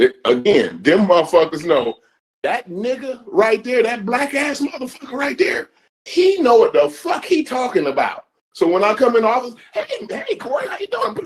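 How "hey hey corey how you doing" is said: very high, eager-to-please, fawning voice. Retelling how coworkers greet at the office: imitating fawning coworkers. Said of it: "They get the tap dancing and shuffling".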